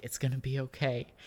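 hushed voice. Voicing a character who grabs a bloodied ally: whispering. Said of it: "he kinda whispers, like".

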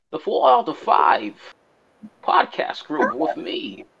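weird German villain voice, high, slow, wide-swinging.

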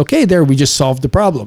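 ordinary talk, nothing marked

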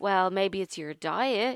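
pointed, jabbing, sarcastic tone. Retelling what slimming club staff say at weigh-in: imitating a sarcastic remark. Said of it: "me being sarcastic".

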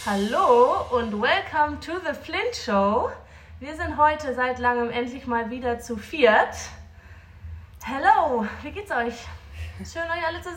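breathless, still catching breath. Opening the Flint Show and greeting the others: out of breath. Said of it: "Bist du noch außer Atem?".

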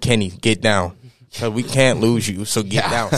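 plain

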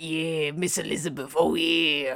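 slow, drawn-out, creepy voice. Doing a creep voice as an impression: Macho Man impression. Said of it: "I did a Macho Man impression".

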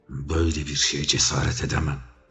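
mumbling, muttering, murmuring under breath. Dared by his master to expose the plot, the underling replies; muttering. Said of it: "diye mırıldandı".

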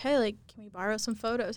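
ordinary talk

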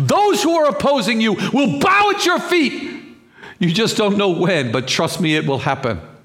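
yelling. Preaching to listeners to encourage them, yelling. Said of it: "forgive me for yelling".

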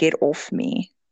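put-on sleepy mumbling. Speaker recounts a vlogger lady talking in her sleep, imitating sleep mumbling. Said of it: "she was mumbling".

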